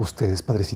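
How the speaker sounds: mock frightened man tone. Retelling how a threatening man suddenly turned toward the preacher, in a mock-fearful voice. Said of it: "voltea así todo temeroso".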